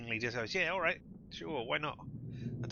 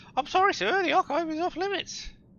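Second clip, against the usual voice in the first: silly put-on squeal, very high and very loud; 11 dB louder than usual. Retelling what a man said at the archive door, ridiculous put-on voice. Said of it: "doing a ridiculous voice".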